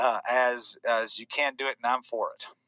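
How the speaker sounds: ordinary delivery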